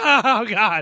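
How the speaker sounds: mock, very loud, high, anguished crying wail. Describing a silly movie scene where a man in agony cries, imitating a man crying. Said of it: "he's like crying".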